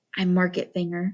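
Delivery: softly spoken. Shed answers Finger's hushed remark about the boy, quietly. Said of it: "said Shed quietly".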